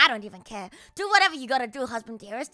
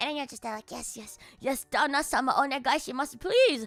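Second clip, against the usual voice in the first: ordinary delivery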